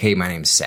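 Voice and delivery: plain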